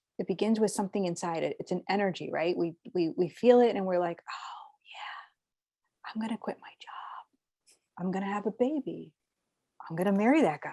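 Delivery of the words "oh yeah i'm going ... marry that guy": quiet, slow, hushed whisper. Acting out a quiet inner thought to another speaker: whispering. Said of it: "I love that you kinda whisper that".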